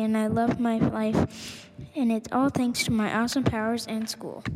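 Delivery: ordinary delivery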